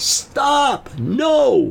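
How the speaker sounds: mock very high, long, full-throated top-of-the-lungs shout. Retelling shouting at a driver heading toward cyclists: retelling a yell at full volume. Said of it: "yelled out at the top of my lungs as loud as I could".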